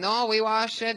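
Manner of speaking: put-on, high-pitched Mexican accent.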